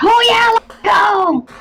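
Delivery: very high, drawn-out shout. Joking about what they would not shout in character: mock shouting. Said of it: "Wasn't gonna be shouting it like".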